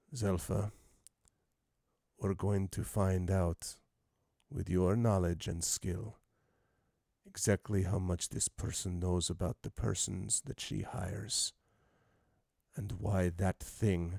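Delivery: hushed, menacing, deadly quiet voice. Speaking in character while holding a sword on someone: very quiet deadly voice. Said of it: "I say very quietly, in a very deadly voice".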